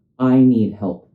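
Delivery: clear, calm, assertive voice. Showing the right way to ask for help: clear, calm voice. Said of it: "with a clear, calm voice".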